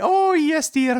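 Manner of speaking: very high Scottish nanny voice. Giving a voice you say you can never do on TV, use a Mrs. Doubtfire voice. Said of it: "I can never do a Missus Doubtfire voice".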